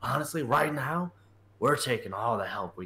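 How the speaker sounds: quiet muttering under the breath. Character looks around and speaks to the guy, muttering under his breath. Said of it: "says on his breath".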